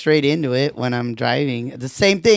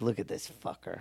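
mock whispered, angry, mad muttering; 6 semitones lower, 18 dB quieter than usual. Retelling their dad in a Safeway checkout line, imitating an angry dad. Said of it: "he's so like mad at the checker".

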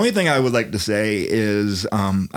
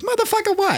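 put-on squeaky, very high little child's voice. Speaker showing off the voices they can do: little kid voice. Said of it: "I can do a little kid voice".

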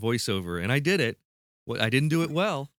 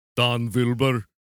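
put-on German accent, W turned to V; 4 dB louder than usual. Recording a mock paid birthday cameo message, in a german accent. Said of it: "that was German".

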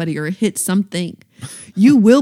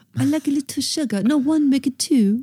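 bad put-on soft, pitched-up British accent; 6 semitones higher, 5 dB quieter than usual. Two speakers hold a quick british accent talk-off about tea, put-on british accent. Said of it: "Want to do a British accent talk off real quick?".

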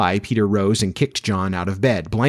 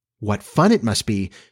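ordinary delivery

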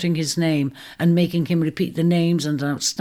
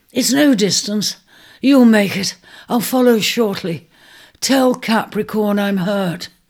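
raised, urgent, pressing, urging voice; 4 semitones higher, 5 dB louder than usual. Narrator reads an injured man urging his reluctant companion to go on without him. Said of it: "he urged the reluctant Ares".

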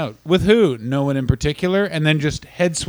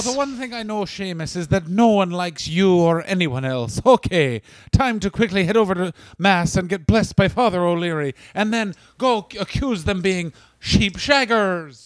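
spot-on put-on Irish accent. Continuing the bit and addressing Seamus, in an Irish accent. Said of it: "What spot-on accents".

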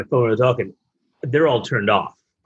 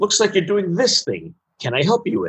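high, sing-song voice swooping upward; 7 semitones higher than usual. Retelling how the paper clip assistant popped up while typing: imitating Clippy. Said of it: "And he'd be like".

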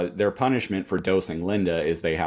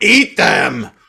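sudden, loud, high-pitched furious tone; 5 semitones higher, 8 dB louder than usual. Retelling a scene where Linda offers cookies: imitating Linda angrily.

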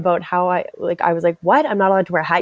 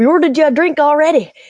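put-on Irish accent, higher pitch; 9 semitones higher, 4 dB louder than usual. Retelling what coworkers said when leaving after a shift: irish accent. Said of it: "With the Irish accent on top of that".

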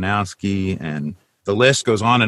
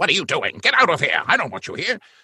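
over-the-top sci-fi villain voice, high and swooping; 8 semitones higher, 3 dB quieter than usual. Performer demonstrating a character he voiced: evil doctor villain voice. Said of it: "And he talks like this".

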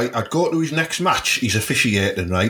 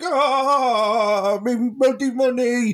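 put-on old grandad voice, much higher and slower; 12 semitones higher than usual. Retelling how an angry man reacted to his stolen savings: old grandad impression. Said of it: "I did an impression of a grander out of bread there".

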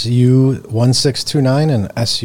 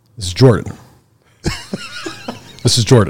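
animated, swooping put-on voice; 2 semitones higher than usual. Doing an impression of Jordan to his face: imitating Jordan's deep voice. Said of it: "a couple of us can do a good impression of you".

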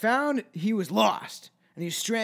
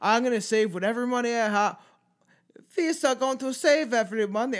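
odd, weird put-on German accent, pitched up; 5 semitones higher, 3 dB louder than usual. Quoting a homeless German man about his plans, doing a weird mock German accent. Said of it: "that was a weird accent".

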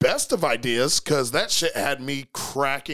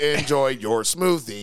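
put-on robot voice. Repeating a character's line, imitating a robot voice. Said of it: "in, like, a robot voice".

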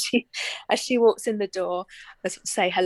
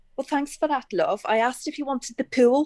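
put-on thick Scouse Liverpool accent; 4 semitones higher than usual. Retelling a woman's reply to her question, in a strong Liverpudlian accent. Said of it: "in a very strong Liverpudlian accent".

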